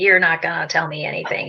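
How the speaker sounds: put-on guarded, dismissive, closed-off, skeptical tone. Retelling how a skeptical husband came in, arms crossed: imitating a skeptical husband. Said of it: "kind of attitude".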